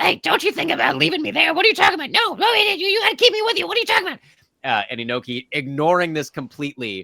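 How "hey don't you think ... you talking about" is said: very high, loud, tiny creature voice. Voicing a talking bird skull that protests being left behind: talking bird skull voice. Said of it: "a little bird skull ... it just goes".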